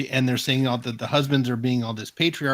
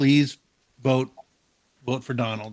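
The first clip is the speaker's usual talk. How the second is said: play-acted pleading, begging tone. Retelling a husband urging his wife to vote: imitating someone begging. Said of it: "he begged her".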